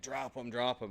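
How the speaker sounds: urgent, firm, repeated, insistent delivery. Retelling an armed standoff, yelling at a suspect: imitating own yell. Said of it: "I'm yelling at him".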